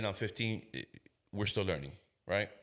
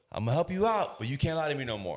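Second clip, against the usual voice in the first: play-acted chummy, laughing, pitched-up reassuring voice; 5 semitones higher, 4 dB louder than usual. A cop retells what he told a man who lied to him, retelling a laughing, friendly tone. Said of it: "I said it in that tone and I'm laughing with him".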